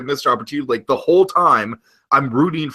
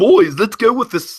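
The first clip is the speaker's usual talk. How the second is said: put-on clumsy, unconvincing Scottish accent with raised pitch; 8 semitones higher, 4 dB louder than usual. Quoting a line from the episode about Scrooge's stinginess: bad Scottish accent. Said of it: "I can't even attempt the Scottish accent".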